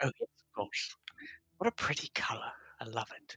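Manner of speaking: put-on British-accented voice. Voicing a magic shop owner showing a feather: British accent. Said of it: "says pretty in a British accent".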